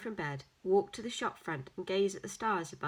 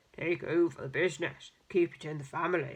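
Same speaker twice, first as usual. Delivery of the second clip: deep, put-on fatherly voice; 3 semitones lower than usual. Telling what her father wanted, she imitates him: deep voice imitating her father. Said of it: "She put on a deep voice, an impression of her father".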